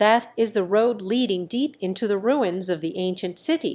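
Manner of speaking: ordinary delivery, nothing marked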